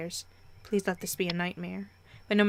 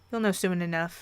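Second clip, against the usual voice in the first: ordinary delivery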